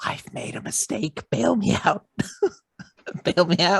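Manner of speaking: loud, theatrical stage whisper. An aside to the group, stage whisper. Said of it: "Stage whisper to the gr- group".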